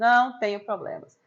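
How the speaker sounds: slow, loud, mocking delivery. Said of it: "E ela fazia assim, ó".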